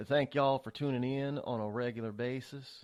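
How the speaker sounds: put-on Southern-hospitality style Southern accent. Thanking listeners for tuning in regularly: put-on southern accent. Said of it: "should I say it in, in Southern hospitality?".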